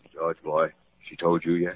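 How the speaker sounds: hushed whispering. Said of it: "What are you two whispering about?".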